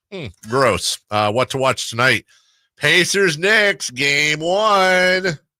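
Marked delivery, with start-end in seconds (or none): 2.8-5.4 loud, high called-out delivery, "one" drawn out long. Announcing what to watch tonight: Oprah voice. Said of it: "Why am I saying it like Oprah?".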